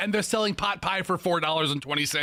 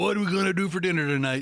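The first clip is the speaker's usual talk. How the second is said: mocking put-on voice. Acting out the question asked at home about dinner, in a put-on voice. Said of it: "Who sounds like that?".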